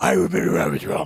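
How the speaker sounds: loud, raspy voice. Reading a quote from a video aloud: imitating Alex Jones's raspy voice. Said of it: "scratchy, raspy voice".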